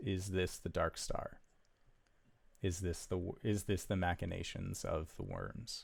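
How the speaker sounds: soft, hushed half-whisper. Voicing a cleric half-whispering a question to her god: half-whispering a question. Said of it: "you hear her whisper the question".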